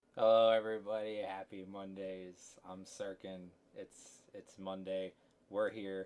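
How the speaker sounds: normal talking voice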